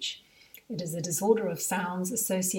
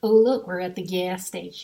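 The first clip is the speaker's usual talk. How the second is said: very loud, flat put-on American cartoon accent; 9 dB louder than usual. Retelling what he says at the gas station, in a flat american cartoon accent. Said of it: "in a flat American cartoon clip from somewhere accent".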